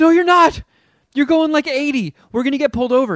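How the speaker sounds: very high, loud, panicked, freaked-out insistence. Recounting riding with a driver who seemed too fast, retelling freaking out. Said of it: "And I start freaking out".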